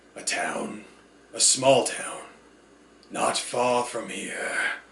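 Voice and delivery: slow, unhurried words with lips barely moving. Narrating a man answering a woman's demanding question, slow, mouth barely moving. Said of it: "The man asked slowly, / The man asked slowly, his mouth barely moving to fit the words".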